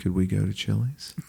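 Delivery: soft, sheepish, small-voiced delivery.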